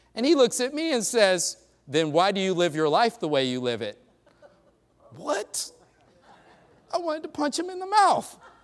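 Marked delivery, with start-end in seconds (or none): 1.9-4.0 acted confident, grinning, smiling delivery. Retelling a coworker's challenging question: imitating a confident, grinning question. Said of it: "almost with a grin and confident".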